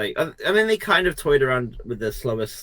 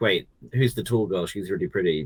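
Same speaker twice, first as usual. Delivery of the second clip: ordinary talk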